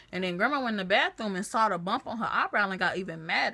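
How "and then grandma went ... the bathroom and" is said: usual speaking voice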